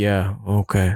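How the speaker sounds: mimicked flat monotone. Recounting being interviewed, quoting the interviewer's reply: imitating his monotone. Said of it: "he was still really monotone".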